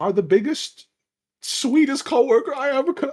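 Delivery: very high, loud outburst, overcome with emotion. In a role-play scene, speaking to a coworker, getting emotional. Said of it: "I'm getting emotional".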